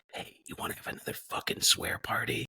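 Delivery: quiet, breathy, hushed whisper under the breath. Retelling a question to a brother at lunch: retelling a whisper. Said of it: "whispered to my brother".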